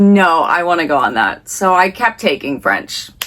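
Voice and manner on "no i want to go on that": usual speaking voice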